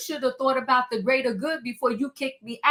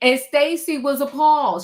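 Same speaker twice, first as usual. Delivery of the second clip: ordinary talk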